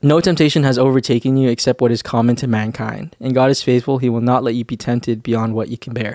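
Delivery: ordinary talk, nothing marked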